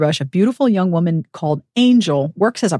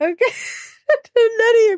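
very high voice, crying with laughter. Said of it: "I have to wipe my eyes now because I'm crying".

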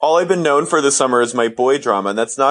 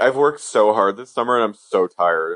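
mock tearful crying voice, pitched lower; 5 semitones lower than usual. Retelling what a crying person said: imitating someone crying. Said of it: "legit crying".

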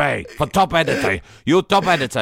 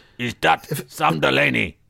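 put-on sinister voice, rough and creaky. Mid-bit, one host suddenly puts on his ISIS voice. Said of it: "That's my ISIS voice".

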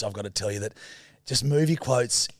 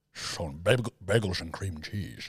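put-on Scottish-accented voice, lower and quieter; 5 semitones lower, 5 dB quieter than usual. Insisting the voice was Sean Connery, then doing it: Sean Connery voice. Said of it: "it was more Sean Connery".

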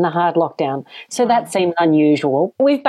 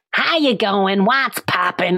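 put-on full-on, wildest Massachusetts accent. Retelling a greeting from Michaela, a girl from Massachusetts, imitating Michaela's Massachusetts accent. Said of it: "most incredible Massachusetts accent".

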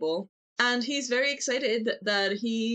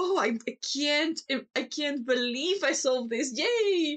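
put-on eager, overjoyed, puppyish gushing and cheering; 5 semitones higher than usual. Picturing a scene Archer watches, imitating an excited man. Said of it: "seeing this excited Puppy of a man".

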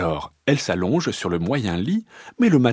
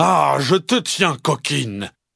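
roaring, big-voiced papa bear voice; 2 semitones higher than usual. Narrator reading the bear catching the little fox, roaring in a big voice. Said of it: "rugit-il de sa grosse voix".

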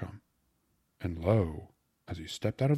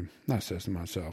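ordinary delivery

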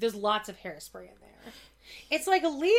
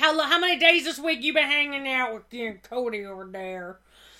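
put-on Louisiana accent, louder; 3 semitones higher, 5 dB louder than usual. Retelling what a girl's mom said to her, in a louisiana accent. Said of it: "I'm like giving them like a Louisiana accent".

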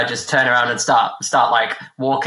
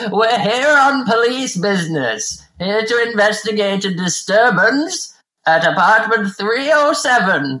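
put-on loud old-person voice, much slower; 9 semitones higher than usual. Retelling cutting into a conversation, in a loud old-person voice. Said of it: "I cut in with a really loud voice of like a really old person".

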